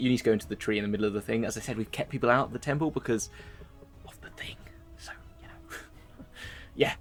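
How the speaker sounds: whispered, very quiet, barely audible. Giving directions into the tree and explaining the temple was kept closed, whispering. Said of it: "I don't know why I'm whispering".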